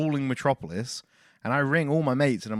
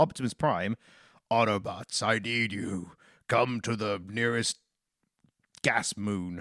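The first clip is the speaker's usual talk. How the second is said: lower put-on robot hero voice; 4 semitones lower, 3 dB quieter than usual. Telling a made-up film plot, doing an Optimus Prime voice. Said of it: "It's a solid Optimus Prime impression".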